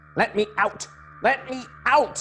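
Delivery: shrill, very high, slow angry calling out. Reading a story's unseen voice calling out: high-pitched angry call. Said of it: "The high-pitched voice called angrily".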